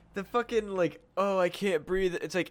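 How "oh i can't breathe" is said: put-on whining complaint tone. Mocking people who complain about masks, imitating a whine. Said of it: "whine about a fucking piece of".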